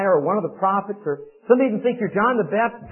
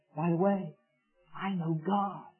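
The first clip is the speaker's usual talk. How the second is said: very quiet, softly spoken, slow words; 2 semitones lower, 11 dB quieter than usual. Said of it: "Maybe say in a quiet voice".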